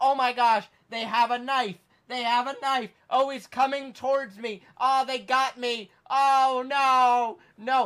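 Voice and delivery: high, drawn-out fake dying panic. Acting out a planned prank call to the hospital: faking dying on the phone. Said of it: "I would fake the death on the phone call".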